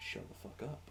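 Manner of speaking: angry muttering, whispered, as if to herself. Acting out a character who glares and mutters: muttering angrily. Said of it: "muttering to herself".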